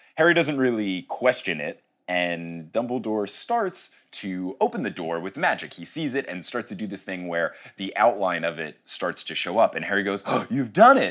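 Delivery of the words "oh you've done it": mock teeth chattering, much higher pitch. Retelling a scene, the speaker voices Harry's reply with put-on chattering teeth. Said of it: "he says it with chattered teeth".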